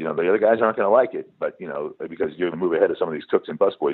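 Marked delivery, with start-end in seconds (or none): none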